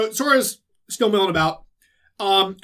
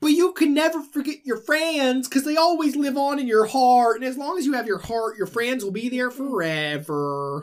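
high, Southern, cartoonish dog voice; 5 semitones higher than usual. Retelling Goofy's reply to what the hoodie guy was saying, in a Goofy voice. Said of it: "That's a good Goofy".

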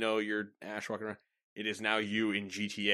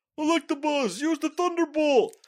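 put-on yell, higher and louder; 10 dB louder than usual. Retelling how a Pokemon trainer yells an attack command: imitating the trainer's yell. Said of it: "in basically that voice".

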